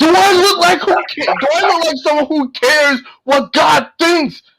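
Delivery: mock, very high, shrill hollered shout. Retelling a movie scene where a villain confronts two cops: imitating Pinhead shouting. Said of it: "Pinhead just shouts out".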